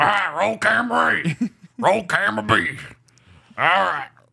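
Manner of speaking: put-on strained, croaky, drunk-sounding voice, very high pitched. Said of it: "to do the voice".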